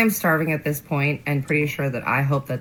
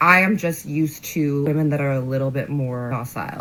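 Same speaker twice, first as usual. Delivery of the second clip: ordinary talk, nothing marked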